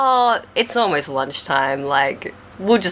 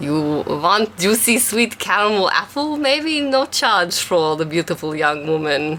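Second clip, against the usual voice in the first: clumsy, terrible fake Russian accent; 3 semitones higher than usual. Narrator voices a man disguised as a vendor, in a very bad Russian accent. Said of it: "speaking in a very bad Russian accent".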